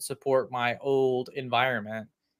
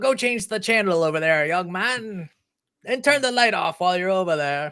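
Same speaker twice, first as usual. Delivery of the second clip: put-on loud, high-pitched old grandpa voice; 6 semitones higher, 5 dB louder than usual. Acting out ordering a kid around, in a grandpa voice impression. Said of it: "my best uh, grandpa voice impression".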